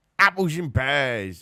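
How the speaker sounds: poor attempt at Cockney. Right after saying they can't do one, the speaker tries anyway; bad Cockney accent. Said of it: "I can't do a Cockney accent".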